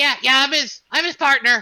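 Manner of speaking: high, small character voice. Introducing the little partner to the new hires, speaking as Frankie in a higher-pitched voice. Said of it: "you hear this kind of like higher pitched voice inside".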